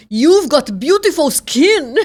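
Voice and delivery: put-on German accent, high and very loud. Retell what the man you interviewed said after you thanked him, imitating a German accent. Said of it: "com aquele sotaque alemão e falou".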